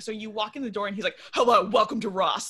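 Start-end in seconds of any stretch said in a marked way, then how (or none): 1.3-2.5 loud, firm delivery. Imitating a Ross security guard greeting a shopper: imitating a firm security guard greeting. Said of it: "a very firm greeting".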